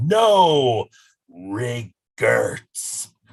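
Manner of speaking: play-acted loud, bossy, demanding read, stretched-out "no". Describing a guy who reads misspelled names aloud, imitating his very demanding voice. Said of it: "like very demanding voice".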